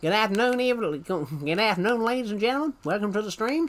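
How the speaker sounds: high cartoon frog-puppet voice. Greeting viewers at the start of the stream, in a Kermit the Frog voice. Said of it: "I sound like Kermit the Frog".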